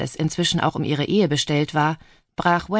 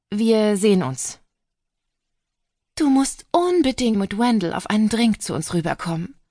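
high, fluting calling voice; 6 semitones higher than usual. Andrea calls after a woman leaving with bags and her pug, fluting.

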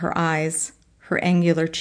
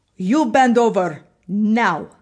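put-on speaking with a Ukrainian accent; 4 semitones higher, 4 dB louder than usual. Narrator quotes the woman who blindfolded him giving an order, Mistress Cat's Ukrainian accent. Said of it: "speaks to me in a Ukrainian accent".

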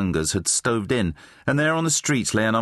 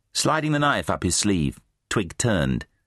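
plain

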